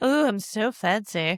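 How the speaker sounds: put-on posh fancy voice, high, very slow, drawn out. Imitating a luxury travel advisor's pitch: imitating a fancy luxury planner. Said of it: "You better be fancy".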